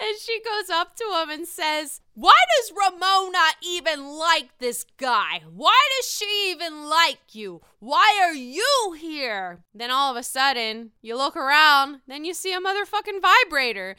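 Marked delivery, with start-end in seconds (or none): 2.1-9.6 put-on, very drunk, slow voice. Retelling a scene, the speaker plays Sonia confronting a guy: imitating drunk Sonia. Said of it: "She's super drunk".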